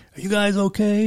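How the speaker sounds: high-pitched shout through a bullhorn. Retelling a guy in a skiff calling out with a bullhorn; retelling a yell through a bullhorn. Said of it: "he's yelling at us".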